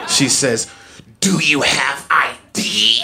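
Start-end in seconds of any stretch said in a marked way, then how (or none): 1.2-3.0 very angry tone, dragged out very slowly. Retelling what the cashier asked the man: imitating the angriest tone. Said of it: "with the angriest tone I've ever seen".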